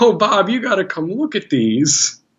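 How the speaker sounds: very high-pitched, amused, chuckling speech. Retelling how a woman called someone over to look at the cards, retelling laughing speech. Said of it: "like kind of laughing".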